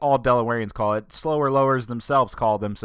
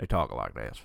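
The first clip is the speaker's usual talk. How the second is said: deep south accent, very low voice, drawl; 13 semitones lower, 8 dB quieter than usual. Showing how people in the southern counties talk: southern accent. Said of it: "That's how everybody talks down there".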